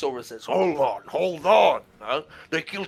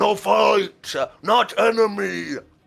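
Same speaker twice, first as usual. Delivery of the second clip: rough, halting, very slow, creaky troll voice; 4 semitones higher than usual. Voicing a troll head calling off the fight: yelling troll head. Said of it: "in common yells out".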